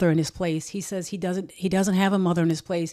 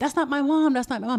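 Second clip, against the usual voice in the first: put-on high, sobbing, crying scream like a boy; 7 semitones higher than usual. Retelling a boy screaming on seeing his mother in the courthouse; imitating a child screaming. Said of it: "He's screaming".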